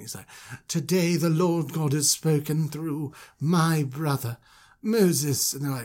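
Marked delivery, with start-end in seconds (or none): 0.7-5.5 supremely eloquent, grand delivery. Retelling the Moses story, Aaron addressing the gathered elders: supremely eloquent Aaron voice. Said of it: "with just, like, supreme eloquence".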